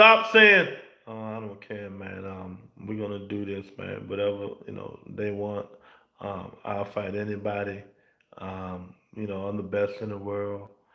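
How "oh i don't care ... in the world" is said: very quiet mumbling with no bass. Mocking how a boxer talks, imitating Boots Ennis mumbling. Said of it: "Stop mumbling when you talk".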